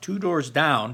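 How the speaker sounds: ordinary delivery, nothing marked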